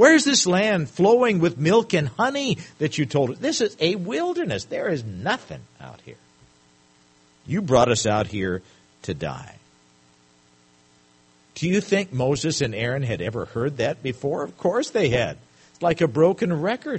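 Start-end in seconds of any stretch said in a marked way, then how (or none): 0.0-9.6 sneering, scornful, mocking, complaining voice. Speaker acting out the people's complaint to Moses and Aaron, with mockery. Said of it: "Can you hear the mockery in their voice?".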